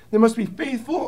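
sudden voice crack on the word "faithful". Reading Paul's words to Timothy aloud: voice cracking. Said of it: "voice crack".

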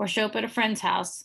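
ordinary delivery

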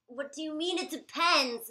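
very loud, full-out exasperated yelling. In a sketch, a spouse reacts to their partner's answer, yelling. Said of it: "you really need to stop yelling".

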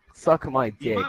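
plain

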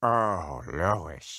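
voice dropped very low. Coaching a partner to pretend to be a cowboy, demonstrating the line: deeper voice. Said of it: "Make your voice deeper".

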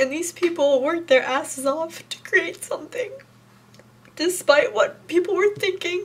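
tearful. Community member thanking the people who worked hard for them, crying. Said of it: "I don't know why I'm crying so much".

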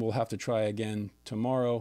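ordinary talk

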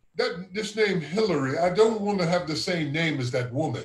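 ordinary delivery

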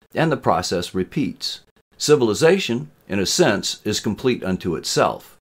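plain

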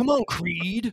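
pure contempt, scornful and dismissive. Quoting a movie line, imitating Mister T with contempt. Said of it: "he says it with such contempt".

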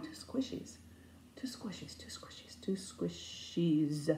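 put-on soft, slow old-person mumble under the breath. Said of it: "I'm mumbling like I'm some old person that's seeing ghosts".

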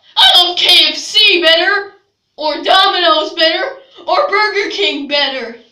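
loud, furious, angry ranting yell. A character ranting about fast food in a story, angry shouting.

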